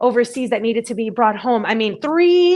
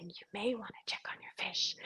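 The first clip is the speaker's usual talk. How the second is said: barely-there, soft, hushed whisper; 2 semitones lower, 23 dB quieter than usual. Retelling a quiet inner voice's warning about the fish: imitating a whisper.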